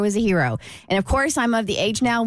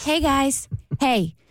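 sweet, kind, motherly voice; 4 semitones higher than usual. Walking over to greet a group, the speaker retells it in her kind mother voice. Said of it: "in my kind mother voice".

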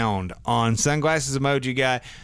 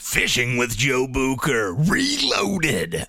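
put-on monster truck rally announcer voice. Announcing the title of the speaker's own fishing videos: monster truck announcer voice. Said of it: "In your monster truck voice".

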